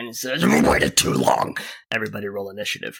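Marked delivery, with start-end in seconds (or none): 0.4-1.6 very low, snarling beast voice. Narrating an unseen creature speaking from behind a tree, snarling voice. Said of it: "you hear a snarl from behind a tree".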